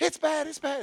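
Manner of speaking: frantic, panicked put-on voice, very high. Retelling a phone call from Tracy, voicing her words; imitating Tracy on the phone. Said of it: "that's the only voice I had".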